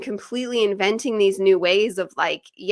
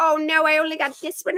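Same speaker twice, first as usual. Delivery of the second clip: put-on high little girl voice; 7 semitones higher than usual. A parent tells how imitating the child gets her laughing; imitating the girl. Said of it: "imitate her".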